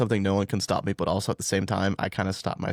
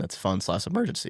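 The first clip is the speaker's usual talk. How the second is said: voice breaking mid-phrase. Explaining how a savings fund works to listeners, voice cracking. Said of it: "that voice crack".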